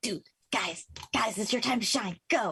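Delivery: theatrical loud whisper. A player's character urges the group on in the game, half-whispering. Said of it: "you just hear me whispering like".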